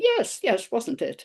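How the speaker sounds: mock smug, quite pleased-with-himself tone. Retelling own reply to a teacher's comment: imitating own smug reply. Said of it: "And I smugly said".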